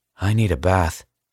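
ordinary delivery

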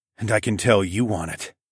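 plain

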